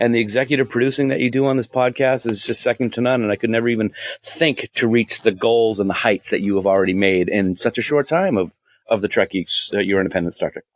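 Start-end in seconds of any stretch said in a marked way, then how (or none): none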